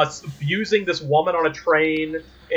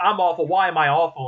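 ordinary delivery

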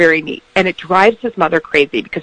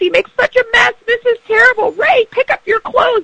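mock nagging rant, very high and shrill. Retelling how a mother nags about a son's clothes: imitating a mother yelling. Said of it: "as she's yelling".

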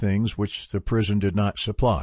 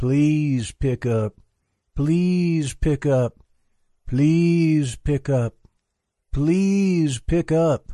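soft, slow, high ghostly chant-like voice. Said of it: "she continued in a soft, ghostly litany".

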